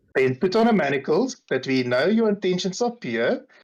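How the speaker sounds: syrupy, falsely sweet tone. Recapping a scene, voicing a character's demand in a mock sickly-sweet voice. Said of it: "he says it in a ve- also very sweet voice".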